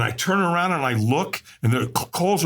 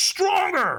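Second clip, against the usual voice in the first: very high, loud, in-your-face scream; 14 semitones higher than usual. Retelling how the trainer screamed in their face: imitating the trainer screaming. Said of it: "he screamed at me really loud".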